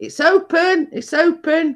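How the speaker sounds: mock very high, very slow, drawn-out shout. Retelling calling out to someone knocking at the door, retelling a shout. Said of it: "So I'm shouting".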